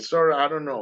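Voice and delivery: ordinary talk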